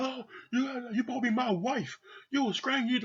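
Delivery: mock enraged screaming, shrill and very high. Retelling how a husband went off at his wife: imitating someone screaming. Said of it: "And he is fucking screaming".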